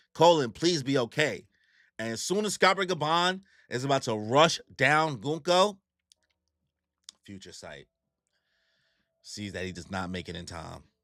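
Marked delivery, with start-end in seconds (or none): none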